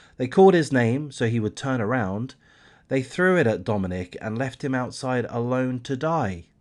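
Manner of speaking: normal talking voice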